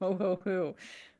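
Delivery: put-on jolly laugh. Answering a knock-knock joke's punchline with a Santa impression. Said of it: "your Santa impression needs a little bit of work".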